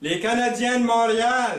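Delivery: shrill, very high, loud yelled voice. Telling a joke where a husband calls to his wife: imitating a husband shouting. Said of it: "Il répond en criant".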